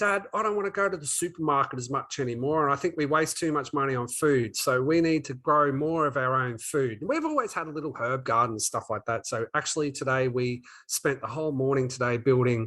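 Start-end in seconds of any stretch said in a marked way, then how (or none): none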